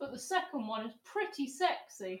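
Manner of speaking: sudden, soft, hushed squeak, very high. Telling a fellow host about a new car, voice jumping up an octave. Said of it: "you went up an octave there".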